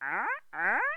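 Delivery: sudden blurt, high-pitched and loud. Describing the bear with the hat to another speaker: Fozzie Bear voice. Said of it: "he's always like".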